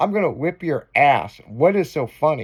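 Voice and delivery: imitated angry voice. Retelling how an angry dad pulled the car over: imitating an angry dad. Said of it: "My dad was fucking pissed".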